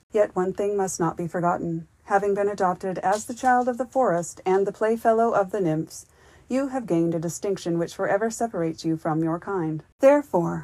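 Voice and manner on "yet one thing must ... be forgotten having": plain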